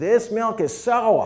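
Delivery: very high, shrill, slow, bad put-on New England accent. Telling a story, voicing a woman complaining to a dairy owner: New England accent. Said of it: "that was a New England accent".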